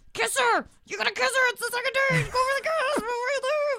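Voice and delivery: very high, frantic, panicked urging yell. Retelling a date's goodbye, acting his inner voice: imitating a screaming inner voice. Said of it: "hear the voices in his head screaming".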